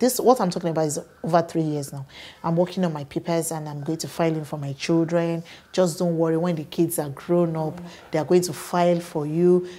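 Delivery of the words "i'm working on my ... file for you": ordinary delivery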